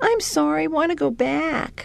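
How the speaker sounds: small, pitiful little voice, high and slow. Retelling his plea at the goodnight routine, imitating a pitiful little voice. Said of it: "in this pitiful little voice".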